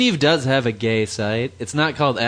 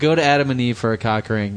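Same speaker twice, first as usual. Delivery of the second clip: plain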